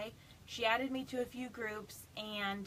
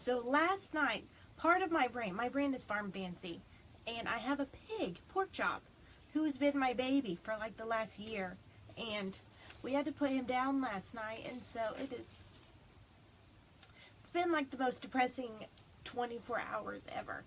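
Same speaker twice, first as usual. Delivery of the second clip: teary, emotional voice, speaking through crying. Addressing followers, embarrassed to be crying; crying while speaking. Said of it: "I'm so embarrassed I'm crying".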